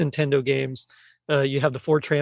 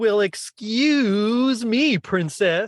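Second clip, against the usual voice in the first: bad, high-pitched, drawn-out California surfer accent; 7 semitones higher than usual. Taking a turn at impressions, admittedly terrible at them, the speaker tries: bad Link impression. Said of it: "they gave Link a California accent".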